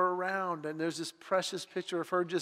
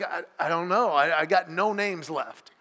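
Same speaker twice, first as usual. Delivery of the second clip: put-on slow, halting, drawn-out four-year-old voice; 7 dB louder than usual. Retelling what a four-year-old said when asked for a name: imitating a four-year-old. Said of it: "four-year-old, she's like".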